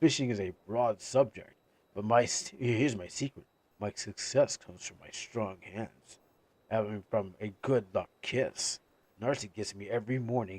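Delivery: put-on voice dropped way down, deep. Replying to a question asking for successful fishing tips, in a deep voice. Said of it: "to the deep voice".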